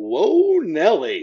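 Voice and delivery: bad play-by-play announcer calling voice. Previewing a football game, trying a Keith Jackson impersonation. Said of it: "I'm gonna do my best Keith Jackson impersonation".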